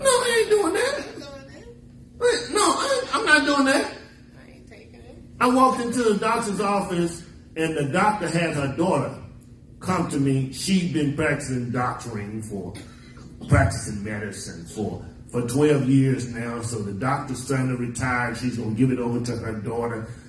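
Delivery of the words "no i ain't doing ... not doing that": high, laughing, emphatic and defiant. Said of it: "He sounds like when I tell some of these doctors".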